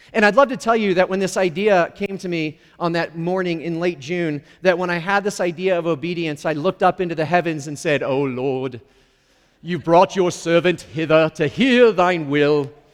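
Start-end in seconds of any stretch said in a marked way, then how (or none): 8.0-12.6 put-on, archaic-sounding British accent. Retelling what he said looking up into the heavens, in a put-on British accent. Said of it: "I have no idea why I'm talking in a British accent".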